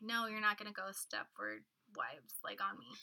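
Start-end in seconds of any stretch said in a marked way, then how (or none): none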